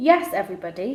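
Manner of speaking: ordinary delivery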